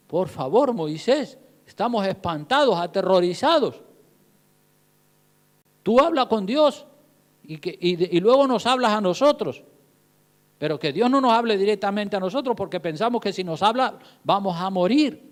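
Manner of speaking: ordinary delivery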